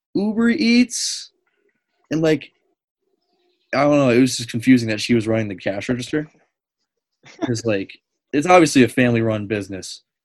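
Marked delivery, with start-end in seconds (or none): 0.2-1.3 put-on, very high, blurted squeal. Retelling how a young girl at a family-run business's register reacted, retelling a scream. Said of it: "she just screams".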